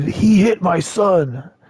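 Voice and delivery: very slow, high, dragged-out shout. Retelling how a man at a concert shouted after punching someone: imitating a man shouting. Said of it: "that guy shouted".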